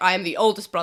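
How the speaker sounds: mock deep voice. Describing a cartoon villain's older brother, imitating his deeper voice. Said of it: "has a deeper voice".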